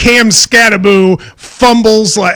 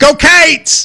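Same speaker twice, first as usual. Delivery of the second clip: "cats" stretched to two syllables, Kentucky accent; 7 semitones higher than usual. Showing the others how people in Kentucky say the cheer, Kentucky pronunciation. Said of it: "but we in Kentucky would go".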